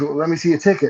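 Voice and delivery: ordinary talk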